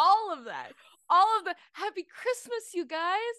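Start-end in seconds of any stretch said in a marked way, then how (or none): 1.7-3.2 high mock holiday commercial voice. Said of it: "sound like a Hallmark commercial".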